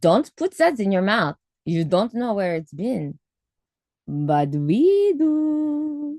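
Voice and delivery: put-on slow, high-pitched German accent. Speaker reading out a quote, in a German accent. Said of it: "in a German accent or something".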